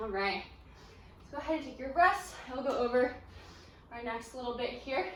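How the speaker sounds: winded, breathless, panting, catching breath between words. Workout instructor talks during the rest while catching breath, breathing hard. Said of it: "I'm like breathing so hard".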